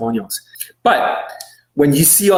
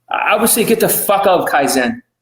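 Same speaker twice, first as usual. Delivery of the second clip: plain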